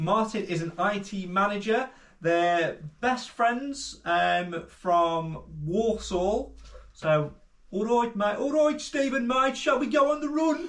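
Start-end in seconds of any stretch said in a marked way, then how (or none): 7.7-10.7 put-on Midlands accent in a very high voice. Acting out one best friend speaking to another, in a Midlands accent impression. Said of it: "I think that's quite a good accent impression".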